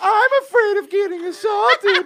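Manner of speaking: mocking imitated voice. Imagining the painter upstairs mocking the speaker's voice while working. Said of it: "he's making fun of you and doing your voice".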